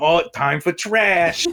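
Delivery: put-on New York accent. Acting out what a raccoon sounds like to him, in a New York accent. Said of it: "in a New York accent".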